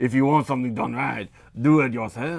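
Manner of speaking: put-on French accent. Trying a saying again after calling for Puss in Boots: Puss in Boots French accent. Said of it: "more Antonio Banderas in Puss in Boots".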